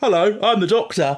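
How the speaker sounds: loud, high-pitched, announcing delivery. Retelling the funniest bit of the scene: David Tennant voice. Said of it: "David Tennant's voice goes".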